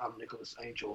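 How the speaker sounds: hushed, dropped-down, low, deep, very quiet voice. Demonstrating a line from the beginning of a movie, voice brought down low. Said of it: "You just bring it down like".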